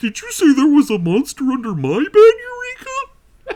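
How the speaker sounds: very high, loud, swooping and bouncy voice. Asked by the other speaker, doing a Magellan impression. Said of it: "Magellan impression".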